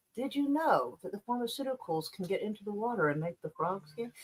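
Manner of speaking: calm, soft, hushed talking voice. Saying Joe Rogan sounds sane because he never yells, imitating Joe Rogan's calm voice. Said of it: "He talks in a nice, calm voice. Like".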